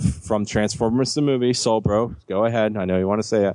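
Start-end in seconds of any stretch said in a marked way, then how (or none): none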